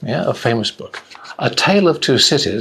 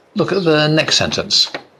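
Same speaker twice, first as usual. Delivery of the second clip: usual speaking voice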